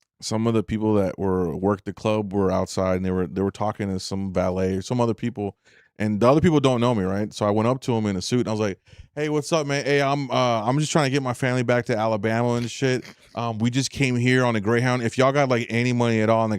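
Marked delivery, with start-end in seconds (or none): none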